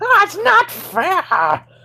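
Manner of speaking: very high put-on voice, sing-song, swooping, drawn-out. Retelling how the old Ludo would react to defeat, Ludo voice. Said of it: "that was a great impression".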